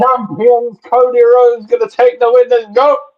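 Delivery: high, excited hollering shout. A new entrant joins the show and shouts into the microphone, shouting excitedly. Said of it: "you're just shouting down the microphone".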